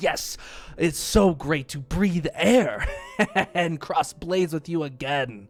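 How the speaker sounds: very loud, high cackling laughter through the words. The Dragonborn answers a lord during a friendly duel, laughing while talking. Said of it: "you see the Dragonborn laughing".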